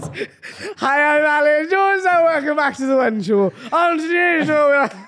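put-on drunk-sounding voice, very high and loud. Joking about a One Show presenter, the speaker does an Alan Jones impression, mock-drunk. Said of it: "That's how she speaks".

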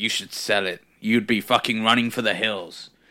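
mock angry old man voice, ranting. Retelling what an old man in a conspiracy video said: imitating an angry old man. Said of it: "old bloke who's always angry".

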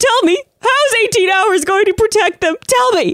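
acted-out screaming-crying. Recounting her reaction while she shed the virus for weeks, retelling screaming and crying. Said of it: "And I was literally like screaming, crying".

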